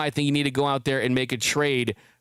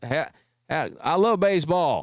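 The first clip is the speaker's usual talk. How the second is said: Atlanta twang, put on on purpose. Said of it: "intentionally trying to speak with a twang".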